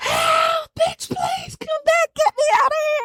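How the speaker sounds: very high, frantic, crying, pleading dog voice. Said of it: "translating for the dogs".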